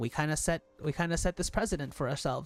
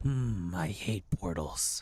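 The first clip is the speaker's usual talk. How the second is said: put-on, forced, very deep voice; 9 semitones lower than usual. Playing a game and trying out a character voice: put-on very deep voice. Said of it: "My voice can't naturally go that deep".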